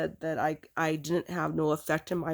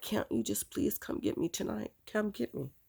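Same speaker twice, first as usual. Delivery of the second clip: quieter, begging, pleading tone; 5 semitones higher, 5 dB quieter than usual. Retelling a phone call, acting out what was said to him, retelling begging. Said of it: "And I just begged".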